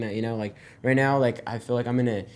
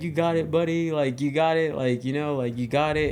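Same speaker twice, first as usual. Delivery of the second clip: play-acted proud, joyful, jittery, nervous cheering tone; 4 semitones higher than usual. Recalling coming in to land with Pops, imitating Pops, joyful and nervous. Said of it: "hear like the joy and al- also like the nervousness".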